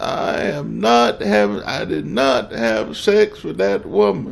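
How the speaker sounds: terrible put-on voice, slow and creaky. Quoting a famous denial about an affair: Bill Clinton impression. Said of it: "a terrible impression of Bill Clinton".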